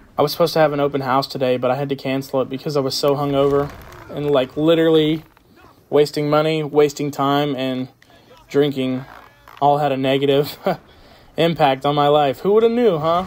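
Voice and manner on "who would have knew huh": mocking, sarcastic tone, pitched up. After cancelling an open house for being hungover, sarcastic. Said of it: "That was sarcasm, obviously".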